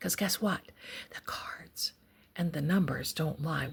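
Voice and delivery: soft, hushed whisper under the breath. Reading cards about evidence, then wondering aloud why: whispering. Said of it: "Why am I whispering?".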